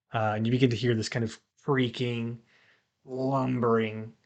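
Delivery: ordinary talk, nothing marked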